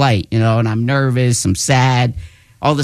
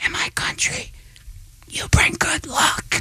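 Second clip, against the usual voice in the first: hushed, very soft whisper. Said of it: "he just whispers in my ear".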